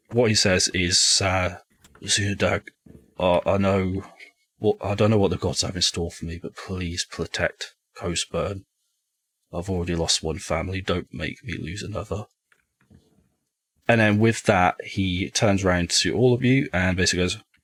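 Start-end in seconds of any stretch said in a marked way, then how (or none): 1.2-12.2 muttered under breath, mumbled. A game master voices a character for the players, muttering under his breath. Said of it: "mutters something under his breath".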